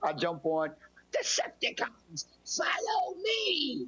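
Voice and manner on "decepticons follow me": very high, barked, put-on robot commander voice. Retelling jumping into an online game match: Starscream voice. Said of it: "I did the whole Starscream voice".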